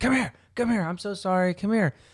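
very high-pitched, acted-out screaming. Retelling a lady calling her dog to come, imitating someone screaming. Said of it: "screaming at her dog".

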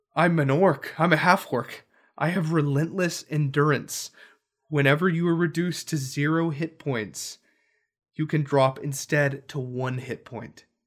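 plain

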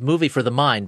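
normal talking voice

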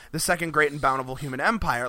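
ordinary talk, nothing marked

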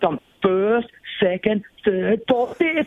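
high, slow delivery with rising pitch on each item.

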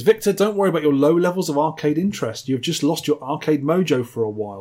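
usual speaking voice

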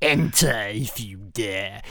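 deep, very slow drawl, every word dragged out. Acting out Palpatine answering a knock at the throne room: Palpatine voice. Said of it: "Palpatine goes".

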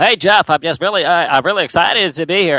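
put-on nasal voice. Talking about a Survivor contestant's voice, do a nasal Penner impression. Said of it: "But this is that nasal quality".

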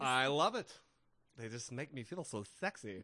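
exaggerated flamboyant put-on voice, badly done.

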